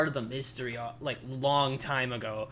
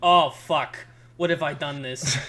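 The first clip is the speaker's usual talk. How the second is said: put-on loud, regretful teenage outburst, freaking out; 8 dB louder than usual. Contrasting whiny voice acting with how it should sound: imitating a teenager freaking out. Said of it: "a teenager going".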